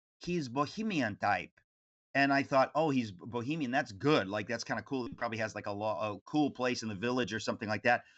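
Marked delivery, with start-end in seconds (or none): 0.2-1.5 put-on thick, heavy Greek accent. Quoting a godmother describing a reclusive man, Effie Dragaris's Greek accent. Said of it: "said in her Greek accent".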